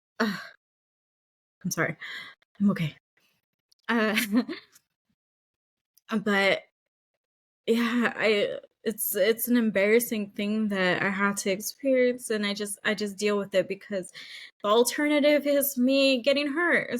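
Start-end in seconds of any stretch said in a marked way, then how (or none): 1.6-17.0 tearful, talking through crying. A speaker apologizes after crying in front of people, crying while talking. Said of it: "I didn't want to cry".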